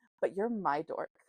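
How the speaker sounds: usual speaking voice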